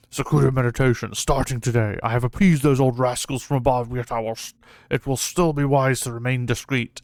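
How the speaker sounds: greedy, gorging, gluttonous voice. Reading a story aloud, voicing the Yellow Wind Sage: gluttonous voice. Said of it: "I don't know why I've gone with this gluttonous voice".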